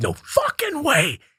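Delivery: very high-pitched, piercing shriek. Retelling screaming in the truck with someone: imitating past screaming. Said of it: "we're screaming".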